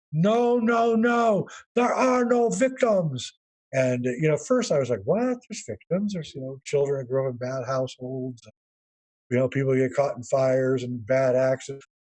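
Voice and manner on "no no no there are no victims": put-on heavy Korean accent, very high-pitched, very slow. Speaker quotes a former Zen master, imitating thick Korean accent. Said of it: "had this thick accent".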